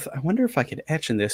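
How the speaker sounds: soft murmur muttered under the breath. Voicing a player's character wondering aloud: murmuring under breath. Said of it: "murmur under your breath".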